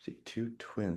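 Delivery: soft, unvoiced whisper, spoken to herself.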